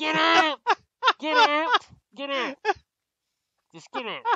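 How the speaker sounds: very high, unintelligible, garbled yelling. Speaker imitates people who yell at those passing through, imitating unintelligible yelling. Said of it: "they always talk like this".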